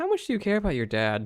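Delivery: quiet half-whisper. Half-whispering a question to Safeguard in character: half-whispering in character. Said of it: "I whisper to Safeguard".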